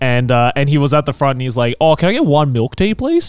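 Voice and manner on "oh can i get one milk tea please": put-on thick, broad, laid-on Australian accent. Retelling how a uni friend ordered milk tea in Japan: super Australian accent. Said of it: "super Australian".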